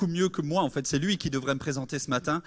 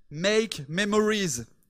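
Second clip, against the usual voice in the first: slow, French-accented English. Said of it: "Désolé pour mon accent".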